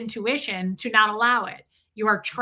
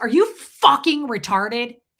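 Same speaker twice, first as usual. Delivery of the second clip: screaming, each word dragged out; 5 dB louder than usual. Retelling being screamed at by a man, the speaker quotes him, retelling a scream. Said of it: "And he starts screaming".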